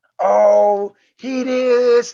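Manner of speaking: wild, shrill, loud, drawn-out, very high yell. Telling a story about a girl yelling in the background: imitating her yelling. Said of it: "like just yelling".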